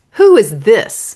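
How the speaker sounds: rude, cutting, unkind, dismissive tone. Retelling what a casting guy said after looking at the headshot: imitating an unkind remark. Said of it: "he very unkindly said".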